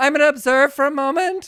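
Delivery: very high, very loud, shrill panic-stricken yell. Retelling an acting class voice exercise, retelling a panicked shout. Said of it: "I just shouted".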